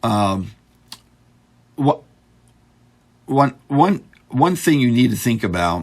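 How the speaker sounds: high voice, stammering and repeating opening words. Speaker explaining aircraft design while looking at notes, stuttering. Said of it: "sorry for stuttering here".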